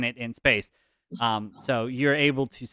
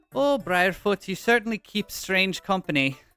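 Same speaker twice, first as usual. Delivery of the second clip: high put-on Scottish accent slipping into Irish; 7 semitones higher than usual. Voicing a shipwright character greeting the party: Scottish accent sliding into Irish. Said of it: "I'm trying to do Scottish for her".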